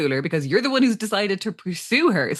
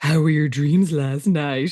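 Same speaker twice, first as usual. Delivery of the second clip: put-on low, intimate voice, lower pitch; 5 semitones lower than usual. Recapping a scene where Joey phones Liz, Joey's mock low, intimate voice. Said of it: "He asks in a low, intimate voice".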